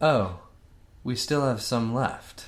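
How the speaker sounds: falling statement tune on "left". Showing another player the line said as a flat statement. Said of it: "make it sound like a period".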